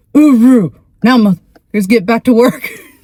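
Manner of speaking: gruff, loud voice. Retelling how a Marine told her to get back to work, imitating a gruff Marine. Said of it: "really gruff breeds".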